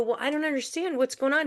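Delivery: mock stunned, high, rushed, panicky disbelief. Retelling getting a call about being let go: imitating own shocked panic. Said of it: "I'm in complete shock and panic".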